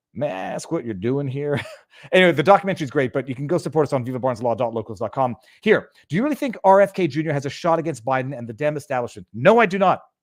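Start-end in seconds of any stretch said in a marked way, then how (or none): 0.2-1.6 put-on thick, deep Southern Tennessee accent. Retelling how a man from the house questioned the crew shooting on site, deep Tennessee accent. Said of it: "in a deep Tennessee accent".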